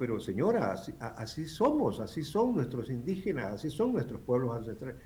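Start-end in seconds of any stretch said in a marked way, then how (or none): none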